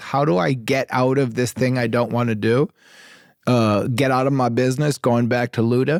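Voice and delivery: plain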